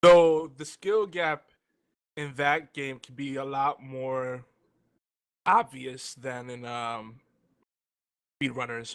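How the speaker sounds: halting words breaking through a mouthful. Comparing two games' skill gaps with a co-speaker, talking while eating, voice cracking. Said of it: "I'm stuffing my face, so my voice is like cracking".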